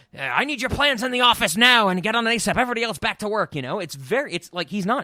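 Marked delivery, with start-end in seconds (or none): 0.2-3.6 gruff, bossy voice pitched higher. A speaker praises a movie voice performance and imitates it: gruff Martin Short voice. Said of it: "he's doing this gruff".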